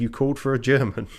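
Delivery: plain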